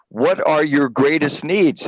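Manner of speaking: usual speaking voice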